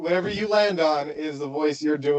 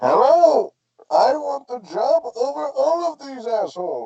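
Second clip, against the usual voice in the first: very high-pitched put-on villain voice; 9 semitones higher, 4 dB louder than usual. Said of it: "you can do Bane".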